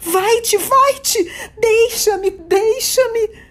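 shouting in terror. Narrator voicing a woman recoiling from the speaker in horror, terrified shout. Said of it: "gritou com repentina energia e sumamente aterrorizada".

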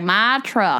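imitated, put-on Southern accent. Describing a date who opens their mouth, imitating a Southern accent. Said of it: "somebody goes on a date with me with a Southern accent".

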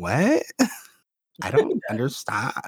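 put-on slow, drawling, sing-song valley girl voice. Speaker retells how a woman reacted to them, in a valley girl voice. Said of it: "the valley girl voice".

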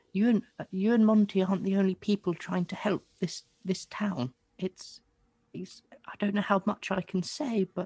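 frail put-on voice. In a tabletop game, the narrator voices a character speaking to Revelo: frail woman voice. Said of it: "This is a frail woman".

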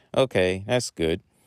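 ordinary delivery

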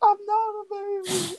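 very high, hysterical sobbing and wailing scream. Retelling how a kid the class called a baby screamed back, imitating Brent screaming hysterically. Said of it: "And he's screaming, like, hysterically. Like crying hard".

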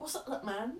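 put-on London accent. Imagining Lewis greeting someone at a dinner: Lewis impression. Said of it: "do your best Lewis impression".

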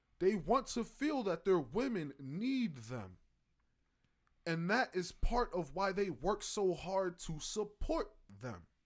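plain

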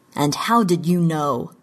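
ordinary delivery

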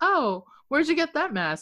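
arch, sarcastic, sing-song, high-pitched tone. Retelling a story, quoting a store clerk, imitating someone sounding sarcastic. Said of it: "he's being sarcastic".

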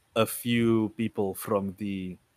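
ordinary delivery

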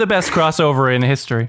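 ordinary talk, nothing marked

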